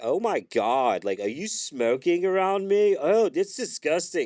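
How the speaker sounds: very high, loud, drawn-out, uppity, snooty disgust. Retelling a story from a crowd, quoting a man complaining about cigarette smoke, imitating an uppity dude. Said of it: "really, like, uppity dude is just like".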